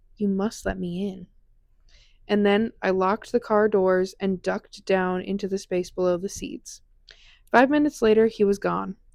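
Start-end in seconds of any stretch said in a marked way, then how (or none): 0.2-1.3 creepy, eerie, hushed half-whisper. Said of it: "The boy whispers".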